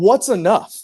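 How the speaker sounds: put-on high-pitched yelling. Retelling yelling from the dugout at the third base coach: retelling own yell. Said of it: "I'm yelling at him".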